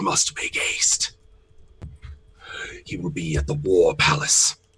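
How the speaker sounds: hollow, soulless, empty voice. A game master voices three mummies approaching the group, hollow soulless voice. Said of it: "in their sort of hollow soul voice".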